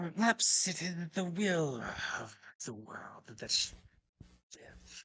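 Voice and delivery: high, soft, swooping, hissing creature voice. Narrating a scene and voicing a character, in a hissing character voice. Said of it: "She hisses and steps back".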